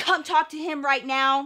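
put-on demanding man's voice. Retelling the man calling mom over: imitating a demanding man. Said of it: "by being hella demanding".

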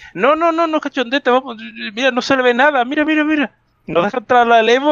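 mocking, high-pitched, whiny voice.

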